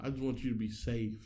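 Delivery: put-on tearful, pleading tone. Retelling a scene where Zendaya starts crying: imitating Zendaya crying and pleading. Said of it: "begging and pleading".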